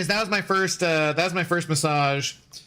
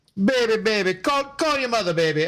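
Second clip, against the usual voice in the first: clumsy, bad, high-pitched Jamaican accent; 5 semitones higher than usual. Retelling what a massage therapist said to them: bad Jamaican accent. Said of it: "I can't do good Jamaican".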